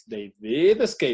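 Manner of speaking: emphatic, heavy stress on the word "did". Showing emphatic English in a lesson, with stress on did. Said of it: "Hasta lo pronuncias así con énfasis".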